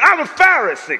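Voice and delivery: strutting, swaggering delivery full of attitude. Showing how to say the line: with a little swag. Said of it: "you gotta have a little swag when you say".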